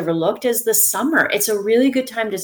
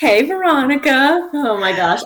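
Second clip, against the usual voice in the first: laughing while talking, much higher; 5 semitones higher, 4 dB louder than usual. A podcast guest greets the host after hearing her business name, laughing. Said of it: "I don't mean to laugh at my own business name".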